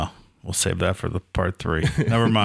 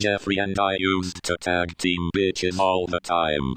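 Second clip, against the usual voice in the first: flat, level monotone with no inflection. Doing a joke voice of Stephen Hawking while others list names. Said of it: "Stephen Hawking".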